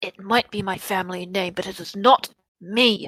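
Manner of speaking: hushed quiet whispering. Playing a character speaking to a demon, whispering. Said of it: "she kind of whispers to the demon".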